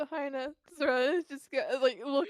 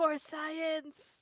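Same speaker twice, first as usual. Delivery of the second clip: soft whisper under the breath; 3 semitones higher, 4 dB quieter than usual. Voicing a character sneaking down behind a counter: whispering. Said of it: "whispers again".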